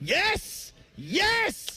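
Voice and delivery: yelling and screaming. Starting a recorded take in front of people, the speaker yells and screams. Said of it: "I'm about to yell and scream".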